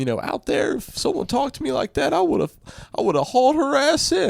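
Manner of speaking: very high, worked-up outburst, close to tears. Retelling what a participant said in a camera interview: imitating someone worked up, near tears. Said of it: "worked up and, like, about to cry".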